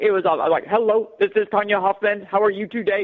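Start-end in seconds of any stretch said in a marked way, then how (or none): 0.7-2.2 stiff, machine-like, flat robotic monotone. Recalling her first video, when she sounded like a robot: robotic. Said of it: "I sounded like a robot".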